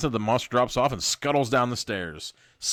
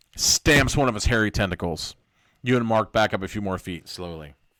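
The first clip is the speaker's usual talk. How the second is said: ordinary delivery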